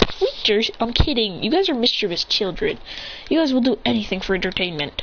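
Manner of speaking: plain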